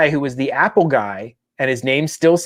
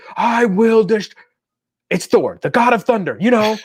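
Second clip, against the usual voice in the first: yelling, cut off mid-word; 7 semitones higher than usual. Retelling Thor yelling at an online troll: imitating Thor yelling. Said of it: "he's yelling at this".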